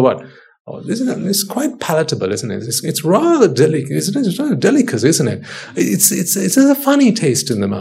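swooping, pompous, pretentious connoisseur voice. Imitating diners who discuss their food: mocking imitation of a food connoisseur. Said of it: "I'm mocking myself".

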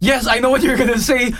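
high, cutting yell, jumping in fast. Retelling what a housemate yelled at the door: imitating someone yelling. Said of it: "then he yells".

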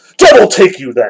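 loud, abrupt, sudden snapped-off delivery. Reading Kolya's retort to a fellow who doesn't know Sabaneyev: snapping. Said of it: "Kolya suddenly snapped".

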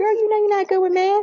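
put-on very high, playful, motherly joking tease. Speaker retelling what her mom used to say to her, retelling a joking remark.

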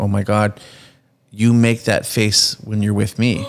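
mock crying, tearful voice. Retelling how an actor's wife spoke while watching his love scene: imitating someone crying. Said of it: "she starts crying and going".

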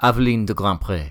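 put-on word said in a French accent. Praising a game's main character, saying her name in Aveline de Grandpré's accent. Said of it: "say her name in her own accent".

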